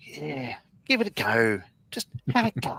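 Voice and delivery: Australian politician's voice. Joking about a typical Aussie answer: Tony Abbott voice. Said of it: "Tony Abbott voice".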